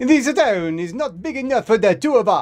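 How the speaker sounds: put-on loud, booming, very high Italian accent. A pasta-like instance challenges another character in a scene, loud italian accent. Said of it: "speaks in a loud Italian accent".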